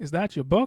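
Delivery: pitch climbs upward on "book". Read-aloud lesson, example question with rising intonation on book. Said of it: "towards the end of the sentence, your pitch becomes higher".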